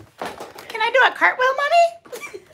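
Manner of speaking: put-on very high baby voice, like little kid. Joking with a friend about childhood play, pretending to be a kid: baby voice. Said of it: "Your baby voice is so funny".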